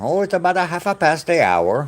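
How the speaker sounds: clumsy, bad put-on Irish accent, pitched high. Asked what the time is in irish, the speaker answers: bad irish accent. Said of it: "I suck at accents, so I tried".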